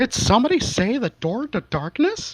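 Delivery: squeaky, very high-pitched voice. Asked for good cartoon voices, the speaker does a Mickey Mouse voice. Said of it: "I could do Mickey Mouse".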